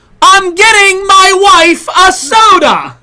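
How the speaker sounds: shrill, very high, very slow, drawn-out shout. Retelling how a man at a restaurant table yelled out: imitating a man yelling. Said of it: "starts to yell out".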